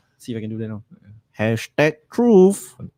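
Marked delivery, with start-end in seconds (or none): 1.4-2.7 high, fake, put-on Chinese accent. Trying out a sound for the hashtag truth bit, fake chinese accent. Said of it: "what's with the Chinese accent".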